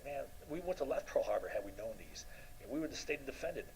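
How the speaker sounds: ordinary talk, nothing marked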